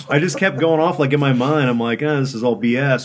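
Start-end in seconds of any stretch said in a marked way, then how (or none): none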